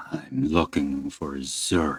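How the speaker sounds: rough, gruff, low voice. Voicing a stranger knocking at a door in the rain: gruff voice. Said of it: "then a gruff voice on the other side".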